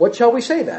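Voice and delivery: ordinary talk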